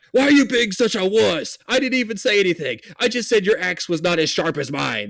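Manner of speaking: furious, high, scolding angry shout. Game master voices an elf lady shouting at another character, angry yelling elf lady. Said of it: "she's yelling".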